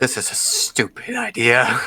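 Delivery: soft, hushed mutter under the breath. A player's character mutters after shouting at the golem: under the breath. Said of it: "under my breath saying".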